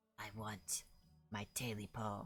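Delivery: rasping creature croak, hoarse, hushed, very soft. Narrator voicing a thing speaking from the darkness: high, hoarse croaking voice. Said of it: "a high, hoarse voice uh, croaked from the darkness".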